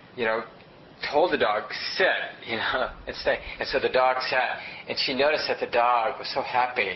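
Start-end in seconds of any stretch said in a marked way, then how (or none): none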